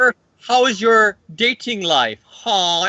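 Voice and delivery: high, drawn-out vampire voice. Joking about a movie line, the speaker does Morbius in a Tommy Wiseau voice. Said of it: "it's if Tommy Wiseau voiced Morbius".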